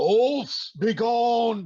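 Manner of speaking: booming, loud, high, drawn-out bellowing war cry. Running at the wolves, swinging an axe to get their attention, bellowing. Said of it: "I'm bellowing out".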